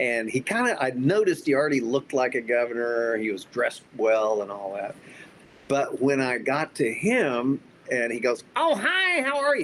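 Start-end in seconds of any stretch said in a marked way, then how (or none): 8.6-9.6 very high, really awful voice. Recounting meeting Rick at a dinner, imitating Rick's terrible voice. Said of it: "He had this really a terrible voice".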